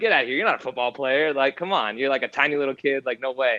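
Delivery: ordinary talk, nothing marked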